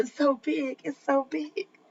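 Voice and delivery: slow, hushed, heavy-breathing pant. Retelling what a man on a live stream said, imitating heavy breathing while talking. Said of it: "doing that heavy breathing".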